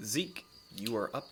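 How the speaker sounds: usual speaking voice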